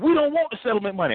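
mock fervent, heartfelt, passionate delivery, high-pitched. Retelling what an emotional lady said at a gathering, imitating a passionate woman. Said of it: "real passionate".

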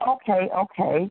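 ordinary talk

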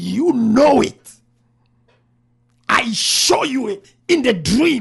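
very loud booming voice. Speaker retelling what the Lord answered her, acting out a raised voice. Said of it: "Now he raised his voice".

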